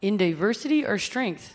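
fake, put-on Canadian accent. Reading the city's motto aloud, put-on canadian accent. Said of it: "is that your Canadian accent?".

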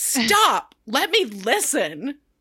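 play-acted, slow, grave, deadly serious, no-nonsense voice. Speaker retells a man on a show turning very serious during an argument, mock-serious tone. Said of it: "very serious and is like".

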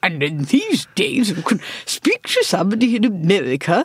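put-on old-fashioned, poshed-up announcer voice with swooping pitch. Teasing a co-host on the radio about their voice, old-timey voice impression. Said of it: "you have quite an old-timey voice".

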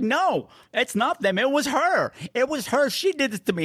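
mock shrill, very high, drawn-out screaming. Recapping a story where Julie tells the cops who did it, imitating Julie screaming. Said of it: "she's screaming at them".

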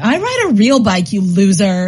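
slow, drawn-out, mocking jeer. A younger sister retells teasing her sister, retelling mocking her sister. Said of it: "I was mocking her".

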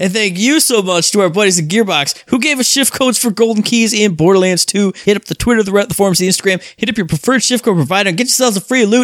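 cheerful happy voice. Closing a podcast, thanking a game studio for shift codes: happy voice. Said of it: "with a happy voice".

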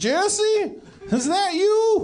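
put-on very high-pitched elderly woman character voice. In a role-play, the narrator answers a player greeting his mom: old lady character voice. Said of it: "You see an old lady ruffling around".

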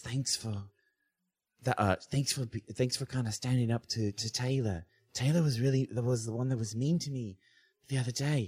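soft, hushed stage whisper. Voicing a student nudging Amelia and thanking her: half-whispering. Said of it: "and she whispers".

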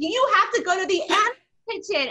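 eager, insistent tone.

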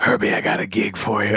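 quiet, hushed, whispered delivery. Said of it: "imitate [name] behind his back".

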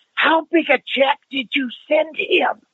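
carrying aside in whisper. Retelling his wife's aside to him in a theater: sotto voce stage whisper. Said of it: "does a sotto voce voice".

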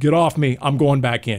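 plain

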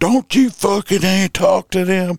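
put-on play-acted loud, shrill, very high-pitched drunk shout. Telling how a drunk friend butted in on a cop, imitating a loud shout. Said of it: "all loud".

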